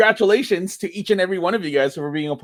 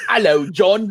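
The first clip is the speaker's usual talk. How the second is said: put-on safari guide accent. Greeting John at the start of an episode: put-on Australian-sounding accent. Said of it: "You sound Australian".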